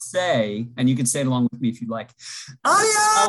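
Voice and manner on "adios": very high, shrieking scream. Saying goodbye on a Zoom call, screamed adios. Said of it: "I said adios, but I screamed it".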